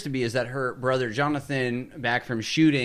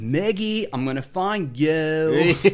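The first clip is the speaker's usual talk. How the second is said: laid-back surfer dude voice; 4 semitones higher, 4 dB louder than usual. Recapping a scene where Jonathan searches the house for Maggie, do Jonathan's surfer dude voice. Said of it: "He has like a surfer dude voice".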